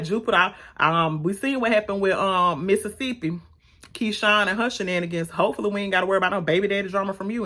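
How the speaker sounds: usual speaking voice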